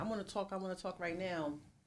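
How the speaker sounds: bossy, pushy, barked, insistent voice. Showing how a partner might bark a demand to talk: imitating someone barking demands. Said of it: "come barking me like".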